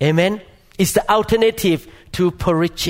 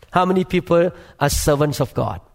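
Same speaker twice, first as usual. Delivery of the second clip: ordinary talk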